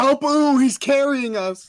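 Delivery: put-on slow, high, loud, stretched-out screaming. Retelling what was yelled during a team match: imitating own past screaming. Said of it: "a lot of it was just me screaming".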